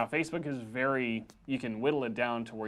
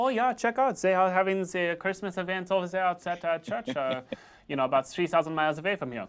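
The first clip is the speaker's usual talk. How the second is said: put-on German accent, higher pitch; 7 semitones higher, 4 dB louder than usual. Imagining someone in germany reading about a local event, in a put-on german accent. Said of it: "That was the best German accent".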